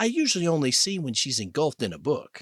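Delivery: ordinary delivery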